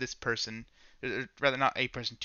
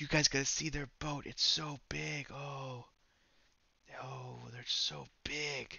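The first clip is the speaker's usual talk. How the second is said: loud, slow stage whisper; 7 dB quieter than usual. Voicing a townsman telling others about the boat: loud whisper. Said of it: "you hear him whispering this to them".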